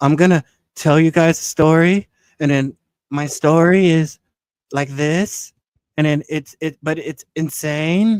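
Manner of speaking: drawn-out, loud viral storytelling drawl. Showing how people talk on TikTok to go viral: stretched TikTok talk voice. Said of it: "the way to do it is you stretch your voice when you talk".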